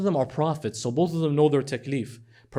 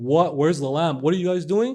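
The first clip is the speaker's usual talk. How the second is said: put-on boy's voice screaming out in alarm; 2 semitones higher, 4 dB louder than usual. Retelling a scripture story, acting out the boy held down: imitating a boy screaming. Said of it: "I bet this boy's screaming".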